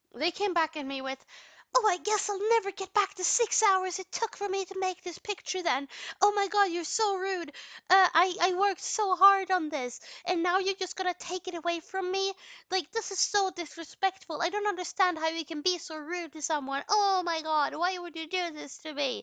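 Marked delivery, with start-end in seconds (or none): 1.8-19.2 hurt, uncalm, high-pitched upset outburst. Retelling an angry reply after a picture was taken away: imitating an upset, uncalm outburst. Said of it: "a very, very calm and collected way".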